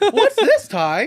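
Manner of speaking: very high cartoon creature voice. Retelling a funny scene from a cartoon, the speaker quotes the character in Agumon voice. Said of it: "I just did a good Agumon".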